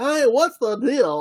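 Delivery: high, slow, nasal put-on impression voice.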